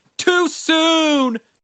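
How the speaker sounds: imitated screaming. Retelling how people reacted to a cancellation: imitating people screaming. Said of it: "people were screaming".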